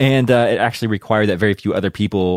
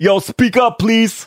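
horrible fake New York accent, pitched way up; 14 semitones higher, 3 dB louder than usual. Imagining the first phone call from New York City to London, in a bad New York accent. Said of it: "my my New York accent is horrible".

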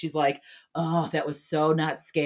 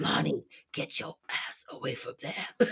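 breathy whisper with lots of breath; 5 dB quieter than usual. Quoting a favorite movie scene: Doctor Loomis voice. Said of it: "Doctor Loomis in Halloween".

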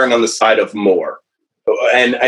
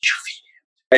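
off-to-the-side soft, breathy whisper. Retelling asking about feeding during someone's meeting: imitating own whisper. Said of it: "kind of whispering".

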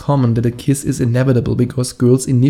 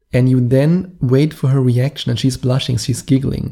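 usual speaking voice

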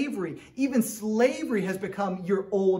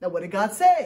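plain

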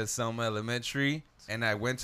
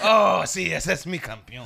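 very loud, high-pitched praising call; 6 semitones higher, 9 dB louder than usual.

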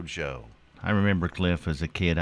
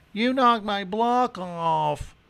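mock very high childish whine, "off" drawn out. Recalling a TV commercial: imitating a kid screaming. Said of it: "the kid screams out".

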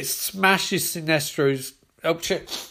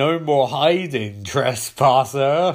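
put-on slow, upper-class, posh English accent; 3 semitones lower, 3 dB louder than usual. Narrating a fight scene, voicing a line in Necron's posh English voice. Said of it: "I'm going to go for a posh English voice".

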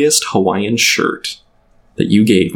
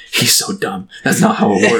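confiding, voiced stage-whispered aside. Retelling what a classmate whispered about a teacher: imitating a whisper. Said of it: "whispered to me".

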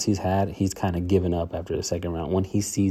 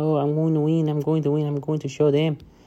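put-on high, pitched-up little-girl voice; 8 semitones higher than usual. Mocking how a fighter sounds speaking English: Marlon Moraes impression, little-girl voice. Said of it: "he talks like a little girl".

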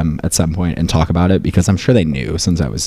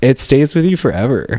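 getting emotional mid-sentence, voice pitched up; 8 semitones higher than usual. Speaker reflects on childhood experiences, getting emotional. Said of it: "I'm getting emotional".

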